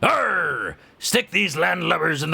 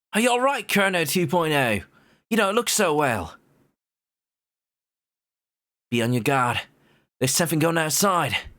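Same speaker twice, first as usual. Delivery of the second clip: best-effort attempt at an Australian accent. Voicing a character who addresses another, in an Australian accent. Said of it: "I apologize ahead of time for my Australian accent".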